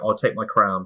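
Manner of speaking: ordinary talk, nothing marked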